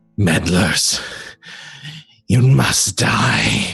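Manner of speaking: slow, rough, screeching monster shriek. Voicing a creature that attacks the party: shrieking creature voice. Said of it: "the creature shriek".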